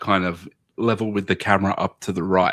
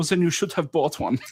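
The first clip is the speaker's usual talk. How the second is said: put-on German accent, much higher; 9 semitones higher than usual. Retelling a character's reply to Charlie about a chocolate bar, put-on German accent. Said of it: "Why did you do it in a German accent?".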